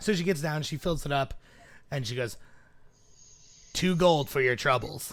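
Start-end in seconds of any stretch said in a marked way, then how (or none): 3.7-5.1 loud, heavy smoker's voice. Voicing a halfling barmaid asking for payment: halfling barmaid, heavy smoker's voice. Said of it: "she definitely sounds like she smokes a pack of cigarettes a day".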